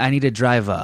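local New Bedford speech. Comparing how people talk, demonstrating a New Bedford accent. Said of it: "New Bedford is like".

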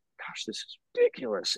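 hushed, soft, breathy whisper close to ear. Retelling what Katie whispered during an awkward date: imitating Katie whispering. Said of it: "whispering in my ear".

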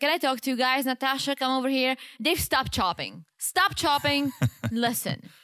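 play-acted stern, serious, angry voice. Retelling how she confronted two people, imitating her serious, pissed tone. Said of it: "she was serious and she was pissed".

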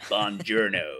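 "buongiorno" said with dead-sure, firm conviction. Joking that a greeting sounded like Brad Pitt in Inglourious Basterds: Brad Pitt in Inglourious Basterds voice. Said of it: "the conviction of Brad Pitt in Inglourious Basterds saying".

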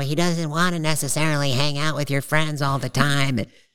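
put-on whiny man voice. Quoting a man who had a really whiny voice, in a whiny voice. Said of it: "he had a really whiny voice. He'd be like".

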